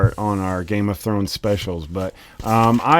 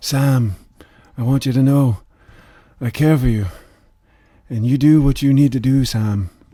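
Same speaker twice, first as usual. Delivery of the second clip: mild, earnest, gentle, unforced delivery; 3 semitones higher than usual. Trading impressions, the speaker imitates a character's soft voice speaking to Sam. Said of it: "he has sort of a soft voice".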